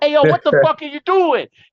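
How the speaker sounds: high, thick, put-on South Jersey Italian accent. Speaker quotes a bar owner coming over, in a South Jersey Italian Guido voice. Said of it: "biggest motherfucking South Jersey uh Italian Guido ass voice".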